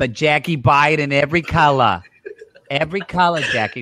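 put-on New York accent. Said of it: "I'm gonna make her sound like a New York".

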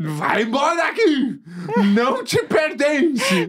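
high, swooping delivery spoken through laughter. Retelling a story of casting out a spirit, quoting the command: laughing while speaking. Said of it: "Você tá rindo que você tá totalmente apavorado".

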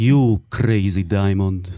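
put-on heavy, thick Russian accent. A woman speaks to the narrator for the first time, in a heavy russian accent. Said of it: "במבטא רוסי כבד".

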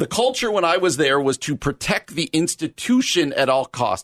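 usual speaking voice

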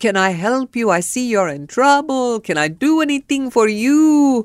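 put-on warm English in a Cuban accent. Retelling a man who came to the car window offering help, cuban accent. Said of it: "And so he's got the accent".

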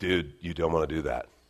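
Southern California surfer dude voice. Retelling what the Spirit said to him, in a Southern California surfer voice. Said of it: "the Spirit to me sounds like a Southern California surfer".

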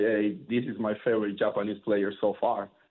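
ordinary delivery

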